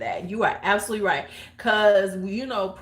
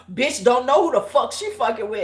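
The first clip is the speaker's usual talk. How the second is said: heated, furious, angry delivery; 3 semitones higher, 4 dB louder than usual. Recounting a woman on the phone going off, the speaker is acting out an angry rant. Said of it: "And she's just going off".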